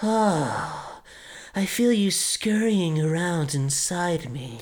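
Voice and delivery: very slow, drawn-out, sultry, seductive, sexual voice. Doing an impersonation of a male character: imitating a sexual-sounding voice. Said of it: "in the most sexual voice like you just did".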